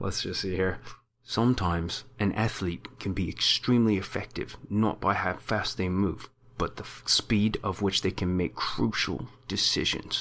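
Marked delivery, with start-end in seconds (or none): 1.2-10.2 soft put-on mumble in a New Zealand accent with a lisp. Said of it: "I have to have a New Zealand accent and have a lisp".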